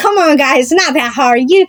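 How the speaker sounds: sarcastic teasing tone. Retelling teasing the hikers along the path: imitating own sarcastic teasing. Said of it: "a sarcastic way that they weren't trying hard enough".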